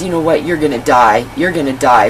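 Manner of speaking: normal talking voice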